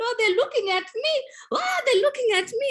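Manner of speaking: very high, frightened, tearful crying. Retelling a girl who cried while picking up rubbish, imitating Ayeli crying, scared. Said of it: "she was crying loudly because she was so scared".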